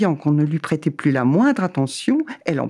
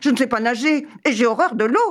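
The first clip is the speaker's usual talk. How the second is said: high-pitched, horrified crying out; 8 semitones higher than usual. Told by the dog they must cross the water, the cat cries out. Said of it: "cria le chat".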